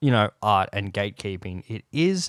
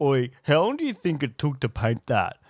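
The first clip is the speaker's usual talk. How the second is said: mock cheeky, jokey, would-be funny quip; 4 semitones higher than usual. Retelling what a stranger said at an art screen, imitating him trying to be funny. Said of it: "and he was trying to be funny".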